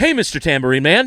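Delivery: very loud, high, dramatic declaiming. Retelling how a spoken-word cover opens: William Shatner impression. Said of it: "William Shatner. He goes".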